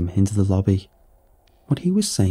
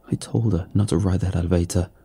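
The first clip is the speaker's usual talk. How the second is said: ordinary delivery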